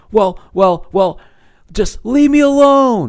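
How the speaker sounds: very high, rising, panicked stammering voice. Retelling how a woman on a phone call reacted, imitating panicked stammering. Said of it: "Instant panic that she knows she looks like a moron".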